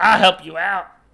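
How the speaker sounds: loud, high, gruff growling voice.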